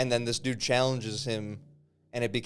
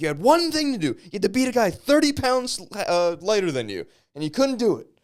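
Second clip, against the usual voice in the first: shrill, very loud yelling, high and swooping; 9 semitones higher, 8 dB louder than usual. Retelling a man throwing a guy out of the house, retelling Sam Hyde's yell. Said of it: "He's yelling at him like".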